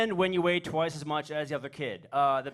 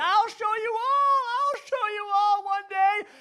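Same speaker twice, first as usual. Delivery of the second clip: very high mock blubbering through tears, sobbing wail; 4 dB louder than usual. Retelling a friend's humiliation on a bus, imitating uncontrollable crying. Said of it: "he was crying uncontrollably".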